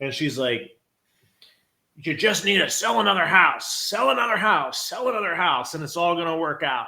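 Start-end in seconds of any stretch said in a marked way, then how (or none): 2.0-6.9 put-on bit raspy, pitched-up, bitter old man voice. Retelling advice from an older agent in the office: imitating a raspy-voiced older agent. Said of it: "Had a bit of a raspy voice".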